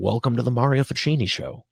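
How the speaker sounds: heavy, dripping, extremely sarcastic tone. Retelling the first time greeting viewers to the show: retelling own extremely sarcastic line. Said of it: "I said it extremely sarcastically".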